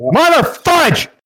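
fake screaming, mock yelling. Testing a microphone after being told to scream at the computer: fake screaming. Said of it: "start screaming at your computer".

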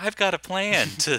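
very high, slow, stretched-out mocking voice. Mocking how a candidate speaks: Elizabeth Warren impression. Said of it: "this is my Elizabeth Warren impression".

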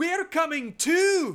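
very high, very loud yelled Scottish brogue. Recapping the movie, the speaker voices Pippin, Pippin's Scottish brogue. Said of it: "the Scottish brogue of Meriadoc Pippin".

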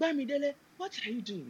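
put-on very high-pitched Nigerian accent. Asked whether their mom is from Nigeria, the speaker imitates mom's Nigerian accent. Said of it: "my mom sounds like".

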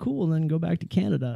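ordinary talk, nothing marked

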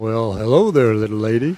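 drawled, drawn-out words. Mock-greeting a crying woman in a game: John Wayne drawl. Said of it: "He's John Wayne [name]".

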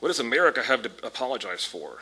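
mock sarcastic tone. Quoting a question someone asked, the speaker repeats it in mock sarcastic tone. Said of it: "said in a sarcastic tone".

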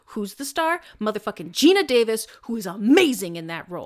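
loud, furious, angry ranting outburst. A speaker argues about who the real star of a movie is: angry. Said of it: "I'm so angry right now".

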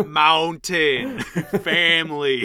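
mock slow shouted words.

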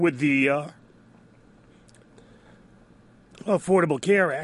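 hoarse, failing voice. Talking about healthcare as their voice gives out, with a frog in the throat. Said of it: "Got a frog in my throat there".

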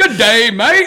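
put-on British accent drifting into Australian, mash-up. Putting on a wig for a bit, the speaker tries an attempted british accent. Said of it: "that was like a British and".

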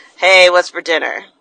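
unenthusiastic. Speaker demonstrating how someone greets family on coming home, low-energy. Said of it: "that kind of lower vibe energy".

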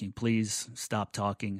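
put-on quiet polite voice. Speaker retells asking a woman nearby to stop talking; retelling a quiet, polite request. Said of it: "very polite, very quiet".

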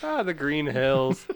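put-on thick Irish accent. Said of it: "try a really thick Irish accent".

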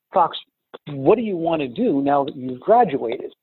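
ordinary talk, nothing marked

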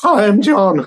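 squeaky, high little voice squeaking up. Retelling first meeting someone admired, imitating own squeaky voice. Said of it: "Squeaky voice".

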